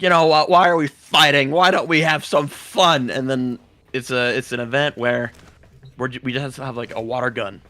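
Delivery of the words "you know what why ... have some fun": put-on drunk voice, higher, louder. Retelling a game boss's message, imitating Kayla DeFame drunk. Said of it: "she sounded super drunk".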